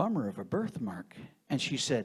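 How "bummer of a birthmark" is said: put-on mutter under breath, lower. Retelling a remark made at a loud table: retelling a mutter under breath. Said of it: "under my breath".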